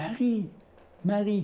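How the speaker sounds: gentle, affectionate call. Speaker commenting on a text acts out how he gently says her name: retelling a soft, tender call. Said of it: "Il lui dit doucement".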